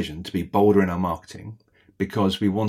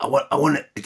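pitched-up, bossy, demanding tycoon voice; 6 semitones higher than usual. Quoting what Lord Sugar inevitably says: Lord Sugar impression. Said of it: "that's my Lord Sugar impression".

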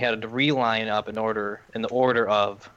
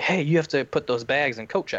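put-on, firm, yelled call-out; 4 semitones higher than usual. Retelling a staff member calling the group back: imitating a staff member yelling. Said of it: "a staff member yells at me".

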